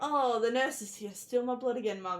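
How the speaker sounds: wry, joking, sarcastic, teasing tone.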